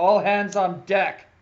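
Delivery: very loud, booming, commanding bellow. Narrating the scene, the speaker voices the sergeant calling out: Sergeant O'Call's commanding voice. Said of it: "a loud, booming, commanding voice".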